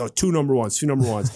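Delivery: ordinary talk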